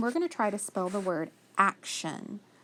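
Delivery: ordinary talk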